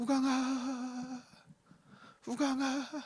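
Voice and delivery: barely audible, feeble, thin, frail voice. Imitating a grandmother calling from under a thick blanket, thin, frail voice. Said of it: "가냘픈 목소리로 우강아, 우강아. 진짜 이렇게 부르셨어요".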